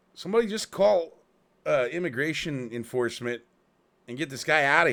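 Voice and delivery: very loud, high-pitched shout. Retelling what somebody else yelled out during the incident, imitating someone yelling out. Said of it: "somebody else ended up yelling".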